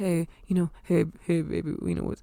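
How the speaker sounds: very quiet, super low, hushed sweet murmur. Retelling how the boyfriend spoke on the phone: imitating someone speaking very low. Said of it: "super, like, low".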